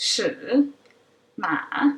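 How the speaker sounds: dipping tone, pitch falls then rises. Teaching Mandarin tones, demonstrating the third tone: a dipping tone. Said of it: "dips from a mid-high pitch to a low".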